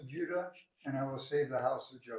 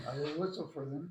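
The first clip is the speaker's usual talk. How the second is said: ordinary talk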